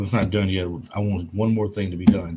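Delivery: ordinary talk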